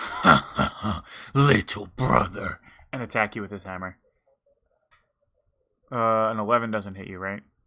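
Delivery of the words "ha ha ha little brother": weird, strange, rasping ghostly voice with undertone. Narrating a character's turn, the speaker has him taunt the player, weird raspy ghost voice. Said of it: "this weird, raspy ghost voice behind his voice".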